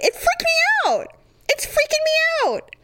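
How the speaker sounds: high, wide, freaked-out cry.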